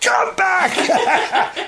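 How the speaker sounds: loud yell. Speaker shows how they call their dogs back: shouting. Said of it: "I shout".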